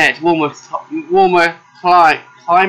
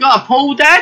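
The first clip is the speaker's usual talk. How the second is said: very high, drawn-out, slow American accent attempt; 10 semitones higher than usual. A father quotes his son asking him something, attempted American accent. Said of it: "Trying to do American accent there".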